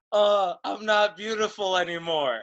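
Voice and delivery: high light wail. Retelling a favorite line she delivered onstage, imitating someone yelling. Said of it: "She just yells".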